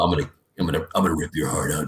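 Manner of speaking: very low character voice. Actor demonstrating how their character Balthazar talks: Balthazar voice, very low. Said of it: "his voice is very low".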